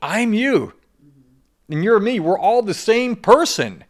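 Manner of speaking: mock very high, loud, slow, drawn-out shout. Retelling yelling into a crowd of people: retelling own yell to a crowd. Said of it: "I'm yelling into this crowd of people".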